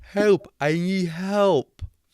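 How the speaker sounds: high, slow deaf-sounding speech. A woman comes up to the players in the game: put-on deaf accent. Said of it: "I'm gonna stop trying to do a deaf accent".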